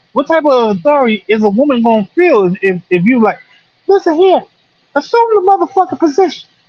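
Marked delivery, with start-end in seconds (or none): 3.9-6.5 very high, would-be commanding short-man voice. Acting out a five-foot-one man giving an order: imitating a short man's voice. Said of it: "why he gotta sound like that though".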